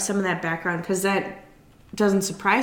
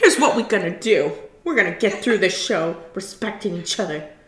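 put-on really mad, scary girl voice; 4 dB louder than usual. Retelling a reunion show moment: imitating Monique's mad girl voice. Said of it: "She's got her mad girl voice on".

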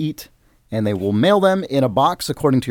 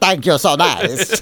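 sarcastic put-on character voice, higher pitched; 3 semitones higher than usual. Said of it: "He's just very sarcastic when he's saying".

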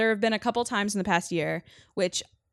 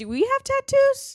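odd, very high, swooping, rising put-on voice; 9 dB louder than usual. Retelling a question to the group, the speaker puts on an odd voice. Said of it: "Why'd your voice get like that?".

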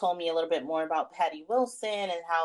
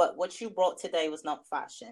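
imitated, mock British accent. Retelling what a woman told her: imitating a british accent. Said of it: "she has a british accent".

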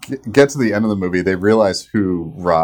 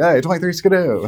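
fast-talking 1920s guy voice, higher; 8 semitones higher than usual. Showing how the classic 1920s guy talks: fast 1920s guy voice. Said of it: "the classic nineteen twenties guy voice is, like, really fast".

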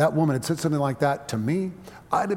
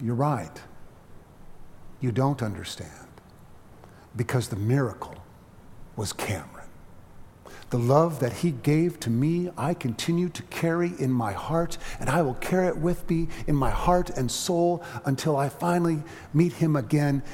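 put-on calm, composed, steady tone. Speaker quotes how she answered a friend's remark about a miracle; retelling a calm reply. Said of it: "in a calm voice".

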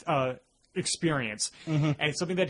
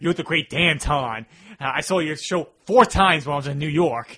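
put-on very loud, over-the-top, old-timey New York accent; 9 dB louder than usual. Retelling how a friend and he mock a film character: over-the-top old-timey new york accent. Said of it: "a very over-the-top New York accent".

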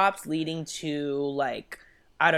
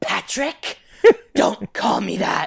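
loud, rough scolding, like a mother; 4 semitones higher, 7 dB louder than usual. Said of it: "she turned into the mom from Mommy Dearest".

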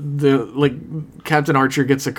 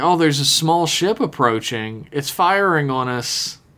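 usual speaking voice

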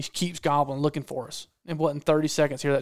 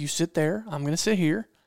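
ordinary talk

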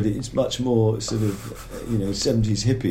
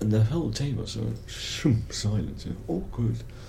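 plain

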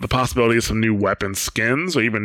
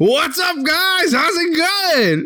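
eager, lively, excited, upbeat delivery; 3 dB louder than usual. Podcast host showing a guest how to greet listeners: enthusiastic greeting. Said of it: "You don't sound nearly as enthusiastic as Bob".

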